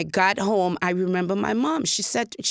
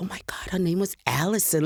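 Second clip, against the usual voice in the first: whispered under the breath, hushed; 3 semitones lower, 3 dB quieter than usual. Answering a question about a first crush, whispering. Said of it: "Look at me, I'm whispering".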